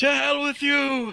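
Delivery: high, hysterical screaming. Voicing a creature being stabbed, cursing its attacker: screaming hysterically. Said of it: "I'm screaming hysterically".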